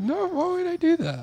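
voice shooting up very high-pitched. Speaker denies a friend's teasing accusation: voice rising high. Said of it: "Your voice is getting real high".

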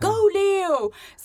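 high, loud, shouted cheering yell. Retelling what spectators shouted at her during a race, retelling a shouted cheer. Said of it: "Skrek de där".

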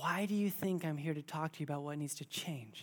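gently spoken, soft, hushed voice. Retelling words heard while kneeling alone in prayer: imitating a gentle half-whisper. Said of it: "so gently whispering to me".

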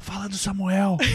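hushed whisper. Recounting what she whispered during a prophecy: reenacting a whisper. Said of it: "eu tava tipo sussurrando assim".

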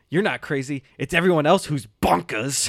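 over-enunciated delivery in a movie-villain style. Retelling Juliet's reply in the bathtub scene: Juliet voice, over-enunciating. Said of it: "over-enunciates everything".

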